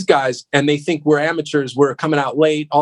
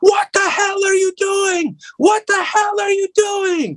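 acted-out, very high-pitched screaming outburst. Recounting his first gig, the production manager screaming at him: imitating someone screaming. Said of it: "he's screaming at me".

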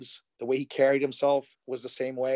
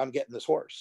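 confident, self-assured tone; 3 dB quieter than usual. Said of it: "he said it with such confidence".

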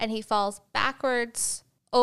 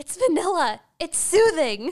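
mock shrill, loud screeching; 8 semitones higher, 5 dB louder than usual. Retelling how Lizzie responded during bickering, imitating Lizzie screeching. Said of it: "her just screeching".

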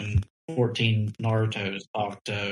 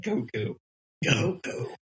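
put-on tone dripping with scorn, disdainful and contemptuous; 2 semitones higher, 3 dB quieter than usual. Teasing another speaker by repeating how they said goku: imitating a disdainful goku. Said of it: "with the amount of disdain you just said".

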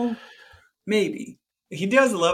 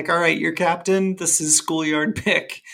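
normal talking voice

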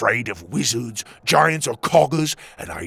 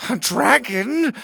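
high-pitched whimpering voice; 11 semitones higher than usual. The king, hiding under the table, sees a dragon, whimpered. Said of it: "the king whimpered from under the table".

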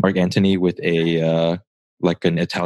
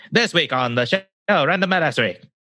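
put-on mid-Atlantic announcer accent, higher; 10 semitones higher than usual. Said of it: "that's mid-Atlantic or transatlantic accent".

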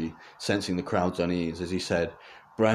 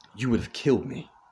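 stage half-whisper, a touch high; 5 semitones higher than usual. His brother chases after him down a darker hallway and half-whispers.

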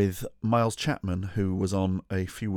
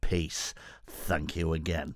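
soft, quiet, odd put-on voice; 3 semitones lower, 5 dB quieter than usual. Podcast host thanking a listener for a coin, in a David Dickinson voice. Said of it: "Don't know why I'm talking like that. What is that voice?".

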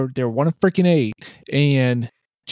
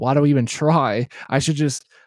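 normal talking voice

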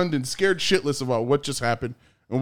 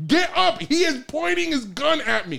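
mock shrill scream, pitched way up; 12 semitones higher than usual. Recounting yelling at the cops on the ground, retelling a scream. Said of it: "I'm screaming at them".

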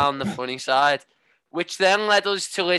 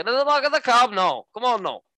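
put-on South Welsh accent, pitched up; 7 semitones higher than usual. Trying the same cab line in different accents, south wales accent. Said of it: "South Wales".

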